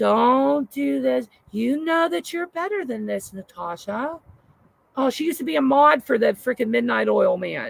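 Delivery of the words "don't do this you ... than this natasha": imitated soft-spoken, gentle motherly woman voice. Imitating a woman on a panel who talks like a mom: soft-spoken. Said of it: "real soft-spoken".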